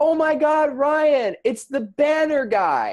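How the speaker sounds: put-on shriek, very high, very slow, loud, drawn out. Retelling what a woman called out across the room: imitating someone screaming. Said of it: "She screams at me across the room".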